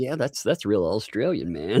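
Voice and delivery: ordinary talk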